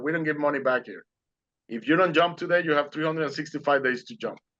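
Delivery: ordinary delivery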